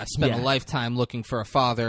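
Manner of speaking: normal talking voice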